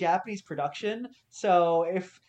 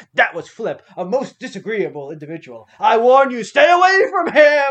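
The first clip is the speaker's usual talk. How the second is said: put-on booming, very loud professor voice; 3 semitones higher, 12 dB louder than usual. Retelling the professor character's warning about Flip: imitating Professor Genius. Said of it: "And Professor Genius is like".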